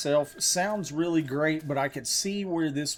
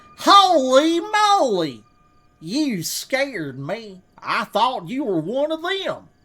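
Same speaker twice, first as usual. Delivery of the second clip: very high, drawn-out put-on hillbilly voice; 9 semitones higher, 7 dB louder than usual. Voicing a character holding a shotgun, in a redneck voice. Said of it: "I kind of want to make them sound like a redneck".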